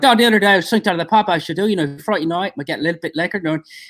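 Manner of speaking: put-on fast, high-pitched Irish accent. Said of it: "So I had to switch it to the Irish".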